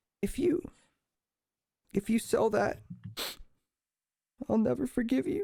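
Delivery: put-on very high, tearful, sniffling little child voice. Voicing a boy who sniffles a little, tearful kid voice. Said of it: "He kind of sniffles a little bit".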